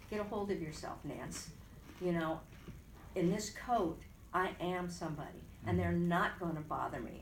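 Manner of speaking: normal talking voice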